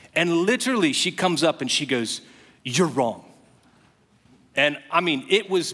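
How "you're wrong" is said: put-on intense, heated, charged, emotional anger. Retelling how a woman confronted him after preaching: imitating an intense angry accusation. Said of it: "there was so much emotion and intensity".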